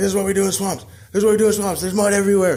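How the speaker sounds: big toad character voice. Telling a story, voicing the big green toad in the swamp. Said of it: "and there was a big old toad, huge, very green, / and there was a big old toad, huge, very green, / and he was like".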